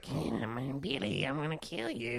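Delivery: unhinged, high, crazy horror-style voice. Describing a horror movie's prank caller: crazy Billy voice. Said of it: "has a crazy voice".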